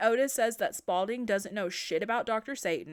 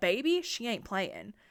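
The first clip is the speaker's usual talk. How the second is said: plain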